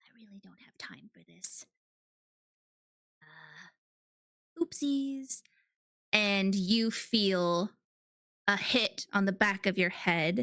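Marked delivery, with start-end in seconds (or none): 0.0-5.4 character voice, whispering. Voicing Bailey stepping back behind the player character: whispering as Bailey. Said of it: "you hear her whisper".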